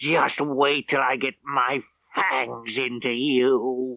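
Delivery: screeching creature voice, long drawn-out "you". A leader in a prison cell spots Rafferty in the next cell, screeching. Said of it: "he screeched".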